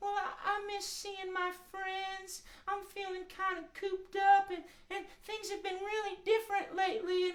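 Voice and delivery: sheep puppet voice, pitched way up. Asked by the host why she feels so-so, the puppet answers: Woolly May sheep voice. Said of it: "It's me, Woolly May the sheep".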